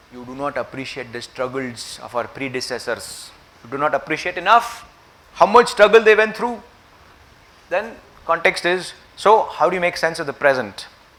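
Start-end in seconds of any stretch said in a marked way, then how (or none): 0.1-3.3 grave, solemn, weighty tone. Quoting a famously articulated phrase: imitating great gravity. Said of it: "said with great gravity in the voice".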